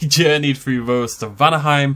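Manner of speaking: loud, dramatic, theatrical narrator voice. Recapping the last video of a game playthrough for viewers, dramatic voice. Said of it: "dramatic voice".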